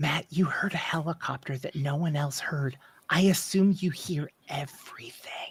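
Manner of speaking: very quiet, hushed, barely voiced whisper. Speaking in character to Matt across the table: whispering very quietly. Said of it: "I whisper very quietly".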